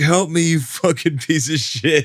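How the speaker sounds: acted, high-pitched yelling. Retelling yelling at a buddy while paddling slowly: retelling a yell. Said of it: "yelling at my buddy".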